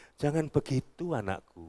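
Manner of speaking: very hushed, soft, mild, gentle scolding tone. Acting out a father's rebuke of his sons, imitating a soft, lenient rebuke. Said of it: "saya bisa mengintonasikan seperti ini. ... Lunak kan?".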